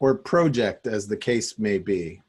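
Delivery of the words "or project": put-on Canadian pronunciation of "project". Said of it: "Canadian accent".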